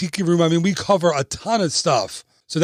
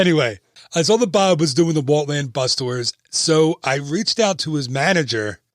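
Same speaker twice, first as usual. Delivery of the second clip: ordinary delivery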